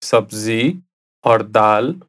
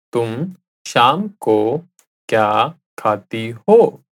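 slow, careful, deliberate word-by-word delivery. Repeating a translated phrase for listeners, said again slowly. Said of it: "I'll say it again slowly".

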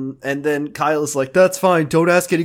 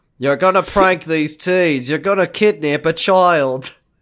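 put-on Australian accent. Acting out a boss and a worker arguing about staying late: Doctor Worthley voice. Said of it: "this is Doctor Worthley voice".

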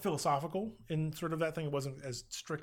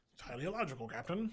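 really bad, terrible actor voice; 4 dB quieter than usual. Doing a quick impression while describing Spock. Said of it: "my terrible, uh, Leonard Nimoy impression".

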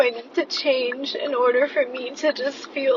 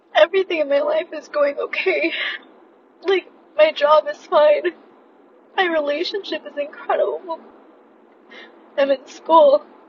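crying while talking, tearful speech; 3 semitones higher than usual. Unable to explain the tears to listeners: crying while talking. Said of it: "I don't know why I'm crying".

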